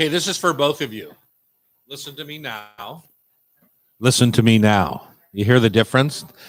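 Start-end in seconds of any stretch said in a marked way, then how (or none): 4.0-5.1 put-on radio voice, louder. Speaker coaching two guests for the show demonstrates a sexy NPR voice. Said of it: "This is my sexy N P R voice".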